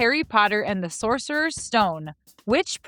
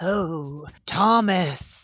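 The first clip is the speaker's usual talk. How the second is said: low, creepy snake voice; 5 semitones lower than usual. Showing how you'd talk to a pet snake, in a creepy snake voice. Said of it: "creepy, ... snake voice".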